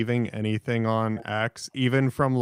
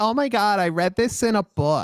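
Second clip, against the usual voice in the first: put-on eager woman's voice, higher; 9 semitones higher than usual. Retelling how the women would beg for a motorcycle ride: imitating an eager woman. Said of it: "the mentally ill women that are like".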